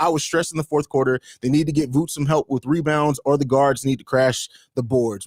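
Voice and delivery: ordinary talk, nothing marked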